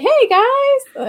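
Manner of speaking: play-acted, very high, loud, all-happy voice. Retelling a show character's one happy moment, imitating someone all happy. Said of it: "and like all happy".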